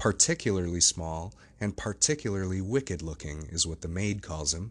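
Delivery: plain reading voice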